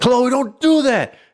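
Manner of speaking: mock shrill, very high-pitched scolding yell. Retelling how they scold chloe: imitating own yelling. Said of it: "when I yell at Chloe".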